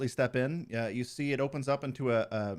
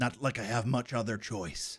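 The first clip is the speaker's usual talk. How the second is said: put-on frustrated, annoyed old man voice. Voicing an old man agreeing to stay: frustrated old man. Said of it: "he's growing increasingly frustrating, or frustrated".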